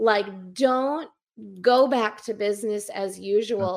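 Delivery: ordinary delivery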